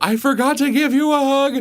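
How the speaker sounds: excited exclamation.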